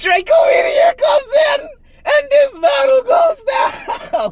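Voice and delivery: worn-out, hoarse, very high play-by-play shout. Commentating a Pokémon battle after losing their voice, hoarse voice. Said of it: "My voice is gone".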